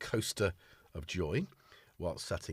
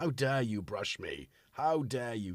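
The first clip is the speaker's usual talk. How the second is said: put-on offended, outraged, indignant cat voice. Voicing a cat after grooming it: put-on indignant cat voice. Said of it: "he's indignant".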